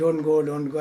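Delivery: normal talking voice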